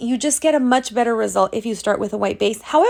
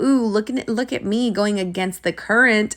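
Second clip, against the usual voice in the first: plain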